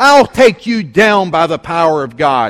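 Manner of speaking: loud, defiant yelled shout.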